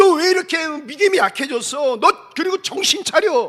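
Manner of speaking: put-on thundering scolding. Retelling scolding oneself with god's word: imitating own loud self-scolding. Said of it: "나를 막 호통을 치는 거예요".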